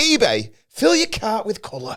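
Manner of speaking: high, swooping, cartoony ad-read voice. Recalling voiceover work for ebay, redoing a line in a cartoony voice. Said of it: "just make your voice cartoony".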